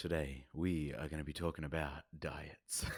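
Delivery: sultry, sexy podcast host studio voice. Co-host asks to hear that voice; opening the episode in a sexy studio voice. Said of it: "Want to hear that voice? Come on, hit me".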